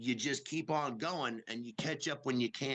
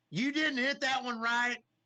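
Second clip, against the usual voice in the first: mock screaming, higher and louder; 11 semitones higher, 6 dB louder than usual. Retelling the inner voice on stage while performing: imitating inner voice screaming.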